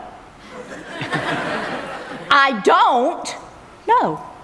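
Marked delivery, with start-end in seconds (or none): 2.3-4.2 a pause before "know", then "know" said high. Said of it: "just emphasize different words".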